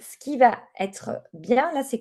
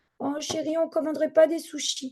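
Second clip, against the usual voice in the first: little, wheedling, pitched-up put-on child's voice; 6 semitones higher than usual. Showing how an adult asks a partner for sushi after a stressful day, in a small little voice. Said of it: "on va faire une petite voix".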